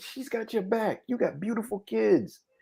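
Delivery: mock angry rant with cussing. Retelling cussing at a movie character in the theater: imitating own angry cussing. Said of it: "and I'm cussing at him".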